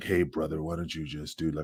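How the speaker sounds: put-on stoner voice. Mocking a sleepy co-host as if he smoked weed: imitating a stoned speaker. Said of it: "Like you smoke weed".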